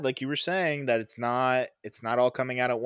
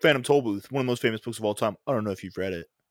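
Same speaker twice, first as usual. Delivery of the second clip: mocking, snooty know-it-all voice, smug and condescending; 3 semitones lower than usual. Retelling what the other speaker just said: mocking imitation of a friend. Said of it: "He's like".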